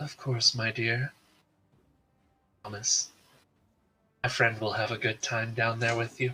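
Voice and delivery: sultry, smooth voice. Running a tabletop game, voicing Vorn in a player's mind: sultry, smooth voice. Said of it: "the sultry, smooth voice of Vorn in your mind as she says".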